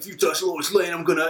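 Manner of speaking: put-on Italian New York accent. Describing a terrible Superman portrayal to the others, Italian New Yorker Superman voice. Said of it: "And he goes".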